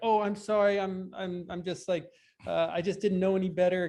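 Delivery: feigned innocent tone, playing dumb, stammering. Speaker imitates how he talked his way out of trouble, in a mock-innocent tone. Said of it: "kind of this innocent".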